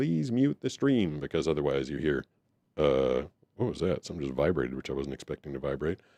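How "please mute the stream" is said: automated phone-hold robot voice. Quoting the on-hold message: imitating a robot lady voice. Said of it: "a little robot lady that says".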